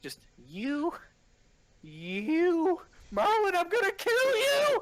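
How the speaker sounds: very high, sing-song, swooping put-on character voice. Speaker shows a voice they do, put-on higher-pitched voice. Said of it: "in a higher pitch like voice".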